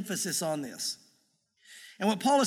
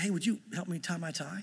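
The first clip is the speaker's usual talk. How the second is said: hushed, much softer, almost whispered. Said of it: "almost like he wanted to whisper to me".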